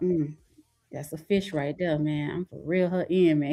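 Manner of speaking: put-on muttering voice. Retelling an old limo clip of m j scouting women, muttering under breath. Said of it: "he's saying on his breath".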